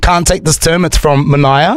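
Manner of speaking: ordinary talk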